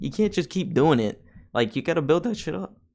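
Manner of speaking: breaking voice cracking up high. Speaker recording an episode, talking on as the voice cracks. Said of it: "I fucking voice cracked".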